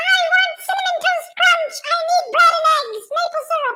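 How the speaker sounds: very high, little cartoon mouse voice. Listing groceries into the microphone, speaking in a Mickey Mouse voice. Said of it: "I'm changing my actual voice to".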